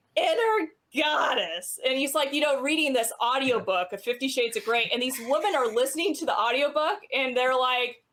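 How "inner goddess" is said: swooping, horrid, high-pitched. Retelling a comedy skit's audiobook reading: Gilbert Gottfried voice. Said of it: "absolutely horrid voice".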